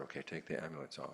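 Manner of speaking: normal talking voice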